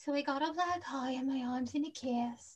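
soft, hushed voice, staying in character. Doing an impression of Ellen Greene after a note on Audrey: Ellen Greene impression. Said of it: "my impression of Ellen Greene".

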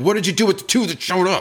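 very high-pitched, shrill screaming. Retelling a reaction to posts about interview no-shows: retelling screaming at phone. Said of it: "screaming at my phone".

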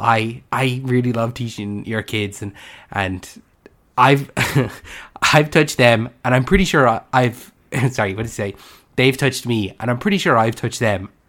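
ordinary delivery

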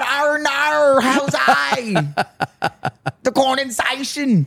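Irish-sounding accent. Trying to say a word the Australian way, slipping into an Irish-sounding accent. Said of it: "that sounded very Irish just there".

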